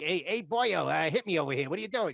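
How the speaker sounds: high, loud tough-guy voice. Describing a character combined with a Joe Pesci vibe: Joe Pesci vibe. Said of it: "almost like a Joe Pesci vibe".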